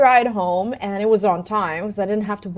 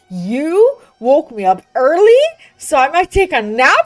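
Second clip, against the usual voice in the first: grumpy, angry, pitched-up, sing-song voice; 6 semitones higher, 4 dB louder than usual. Telling about her day, a parent imitates her child's complaint, mock-angry. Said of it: "being like all angry".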